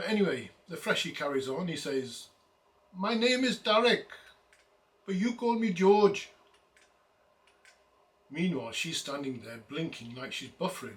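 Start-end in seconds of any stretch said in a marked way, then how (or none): 3.0-6.3 loud, high-pitched, put-on Pakistani accent, best attempt. Telling a story about a freshie talking to a woman, quote him in a best-attempt Pakistani accent. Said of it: "the best I could do with uh, Pakistani accents".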